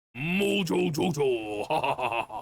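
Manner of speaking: high-pitched, put-on, distinct cartoon-style voice. Showing the contrast with the right way: Mojo Jojo voice. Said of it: "like that".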